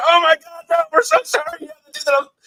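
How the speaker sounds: put-on very high, embarrassed, awkward teenager voice. Retelling how the caught couple apologized, imitating an awkward teenager apology. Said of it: "awkward teenager".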